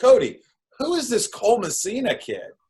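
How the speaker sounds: mock very high screaming yell. Retelling calling to cody across the hallway: retelling own scream across hallway. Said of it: "screaming across the hallway".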